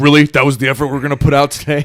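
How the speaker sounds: angry coach voice. Retelling a coach scolding the team after a sloppy win: imitating an angry coach. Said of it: "your coach is fucking pissed at you".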